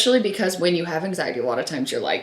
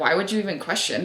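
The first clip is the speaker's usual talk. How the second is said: usual speaking voice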